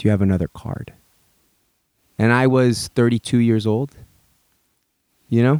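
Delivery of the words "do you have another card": soft, gentle, hushed, low-pitched voice. Retelling what a man said after taking the speaker's card, soft voice. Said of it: "in a soft voice goes".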